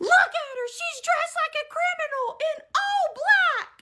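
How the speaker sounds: mock shrill shriek, pitched way up, high and loud. Recounting being accused of stealing a purse, retelling a scream. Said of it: "He started screaming".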